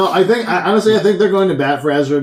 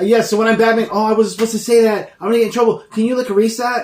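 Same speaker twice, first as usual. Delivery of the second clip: put-on American accent, higher pitched; 7 semitones higher than usual. Joking about a spoiler-prone actor playing Batman: Tom Holland impression, American accent. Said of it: "Why am I doing my American accent?".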